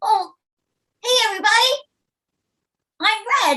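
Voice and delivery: shrill, very high, loud voice. Getting into a character's voice after saying you must find it: Red's voice. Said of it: "you've got to sort of get your voice".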